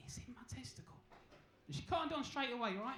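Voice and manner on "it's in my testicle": soft, hushed, embarrassed, barely voiced whisper. Speaker retelling how he leant down to answer her; retelling an embarrassed whisper. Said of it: "I just leant down and I whispered".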